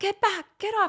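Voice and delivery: very high, loud yell. Telling about a dream of fighting off Demogorgons with a sword, retelling a yell from a dream. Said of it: "And I was like yelling".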